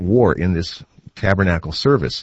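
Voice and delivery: plain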